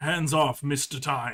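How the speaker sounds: loud, guttural, mechanical robot voice. Narrating, an automaton blocks your reaching hand: guttural robotic voice. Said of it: "in a very, like, guttural, robotic voice says".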